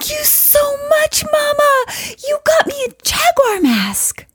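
mock very high, sing-song, bursting little-kid enthusiasm. Retelling her young son's thanks for a gift: imitating a child, super enthusiastic. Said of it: "super enthusiastically".

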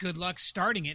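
ordinary talk

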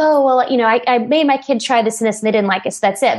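ordinary talk

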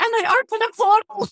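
very high, loud, thrilled cry.

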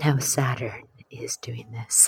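hushed, very quiet close-mic ASMR whisper. Joking about doing a whole asmr energy report, in an asmr whisper. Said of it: "We got to do a whole ASMR energy report".

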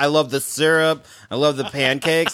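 teasing, mocking parody voice. Teasing the other speaker by mocking his words: mocking imitation of a friend. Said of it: "you're like".

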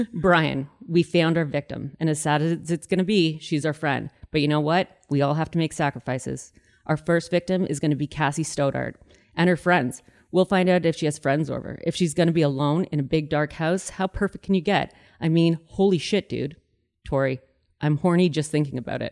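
ordinary delivery

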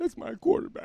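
put-on high, whimpering, baby-like crying. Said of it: "Just crying like a baby".

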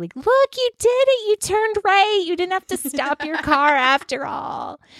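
mock, high-pitched sarcastic cheerleading praise. Recounting cheering someone on as they turn right, retelling sarcastic cheering. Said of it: "cheering them on sarcastically".

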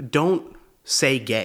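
aggressive, talking-down scolding tone. Retelling what a man behind them said: imitating an aggressive tone. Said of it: "He said it like that to me, like aggressively".

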